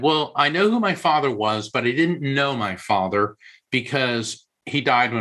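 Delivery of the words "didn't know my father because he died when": ordinary talk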